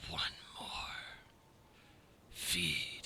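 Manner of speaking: very quiet, barely voiced, breathy whisper. Voicing an unseen creature in the snow: whispering voice. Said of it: "it kind of just whispers over the snow".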